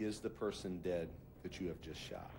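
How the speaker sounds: ordinary delivery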